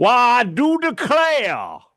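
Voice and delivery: put-on old Southern accent, very high and swooping. Planning a costume appearance, the speaker slips into an old South voice. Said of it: "I need you to be like old South".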